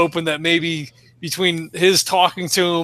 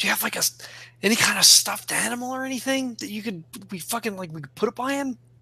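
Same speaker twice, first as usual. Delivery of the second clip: hushed stage whisper, loud enough to overhear; 4 semitones higher, 7 dB quieter than usual. Asking a helper for a stuffed animal for the patient: stage whisper. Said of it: "stage whispers".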